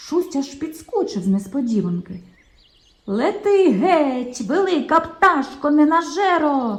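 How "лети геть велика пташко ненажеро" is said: booming, thunderous, slow, pitched-up cry. Shunya, hidden behind a bush, chases off a bird: thundering. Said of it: "гримів голос".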